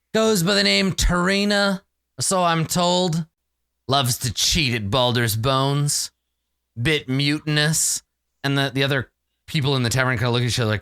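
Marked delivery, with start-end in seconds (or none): 0.1-8.0 dead-eyed man character voice. Voicing the dead-eyed man asking tavern folk about tarina: voicing the dead-eyed man. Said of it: "says the dead-eyed man as he sniffs the air".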